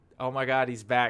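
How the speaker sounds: usual speaking voice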